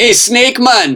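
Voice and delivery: put-on high-pitched, slow Jamaican accent. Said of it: "They had Jamaican accents".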